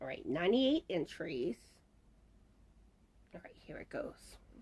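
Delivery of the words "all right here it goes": soft whisper, voice giving out. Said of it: "my voice is starting to try to start going out".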